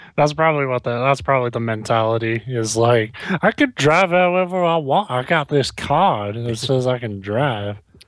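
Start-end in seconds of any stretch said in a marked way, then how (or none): 3.4-7.8 fake, put-on Southern US drawl. Acting out a drunk driver's mentality: put-on Southern accent. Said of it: "automatically go to, like, Southern accents".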